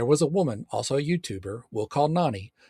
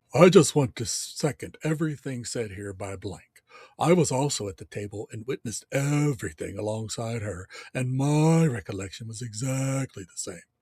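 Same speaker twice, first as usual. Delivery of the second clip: manly, deep, low voice. Quoting a man seconding someone's account, imitating Arden's deep voice. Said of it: "I'll do my best to imitate Arden's deep voice".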